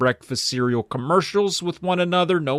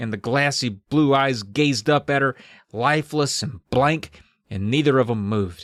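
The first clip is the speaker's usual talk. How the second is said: plain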